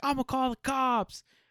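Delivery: acted, very high, drawn-out full-lungs scream. Retelling how a man confronting someone on camera screamed: imitating someone screaming. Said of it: "screaming this at the top of his lungs".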